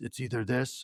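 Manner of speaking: low, soft murmur.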